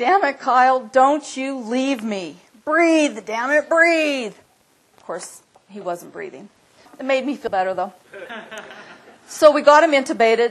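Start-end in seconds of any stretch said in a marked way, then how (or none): 0.0-4.3 slow, drawn-out screaming at full volume. Retelling screaming at him over the loud rotor noise: retelling a scream. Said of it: "And I was screaming".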